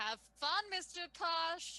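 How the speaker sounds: high, loud parting shout. Voicing a character leaving through the door: shouting over her shoulder. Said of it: "she just shouts out over her shoulder".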